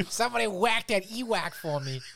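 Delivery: put-on loud, belted, very high-pitched Boston accent. Quoting a scene from the Bill Burr episode: Bill Burr Boston accent. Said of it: "His Boston accent".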